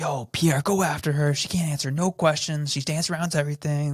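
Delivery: high, hyped-up mock fan voice. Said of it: "the conservatives like".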